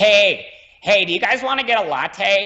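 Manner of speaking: high, throaty North American voice, squeezed into throat. Imitating North American women walking by: forced throaty North American women's voice. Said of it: "they were forced into their throat".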